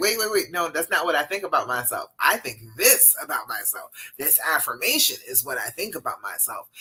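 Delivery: ordinary talk, nothing marked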